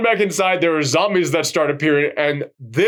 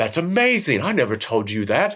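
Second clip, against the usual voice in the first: bad, horrible put-on British accent; 4 semitones lower than usual. Retelling a line from a film scene: horrible british accent. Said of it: "That's my horrible British accent".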